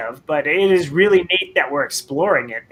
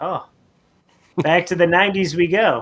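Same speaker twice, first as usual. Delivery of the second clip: plain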